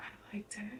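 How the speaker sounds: low, hushed voice, almost a whisper. Retelling what a woman said to a detective questioning her, in a low voice. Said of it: "she was like in a low voice".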